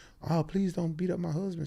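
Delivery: mock sobbing, tearful, pleading cry, very high. Retelling a wife in the car pleading: imitating a crying woman. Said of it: "his wife was crying like".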